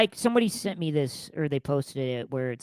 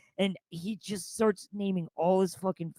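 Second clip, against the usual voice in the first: ordinary delivery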